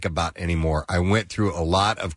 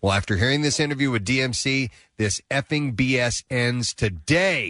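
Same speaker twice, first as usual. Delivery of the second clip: ordinary delivery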